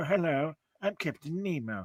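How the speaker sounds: put-on hushed, slow, soft old-movie actor voice. Telling someone about the guy who plays him in an AMC show, do a Captain Nemo voice. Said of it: "that's why I'm doing the voice".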